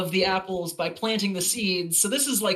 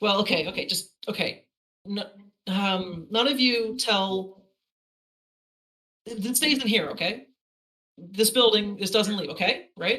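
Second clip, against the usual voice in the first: plain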